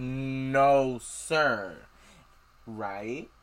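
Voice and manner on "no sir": mock sassy teenager voice. Retelling a chapter where Percy answers with attitude: imitating Percy's sassy attitude. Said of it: "here we go again with the sassy attitude".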